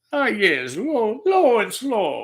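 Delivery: poor attempt at Italian accent. Imitating an italian barbecue fan, attempted italian accent. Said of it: "I can't do an Italian accent".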